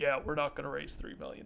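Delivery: deep, soft, lecturing professor tone. Retelling what Luke said, in Luke's deep professorial voice. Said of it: "in this deep professorial voice".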